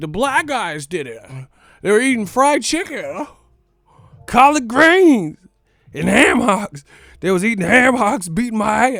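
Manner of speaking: put-on, laid-on-thick delivery. Retelling a man's exaggerated story: imitating someone laying it on thick. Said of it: "he was putting it on thick".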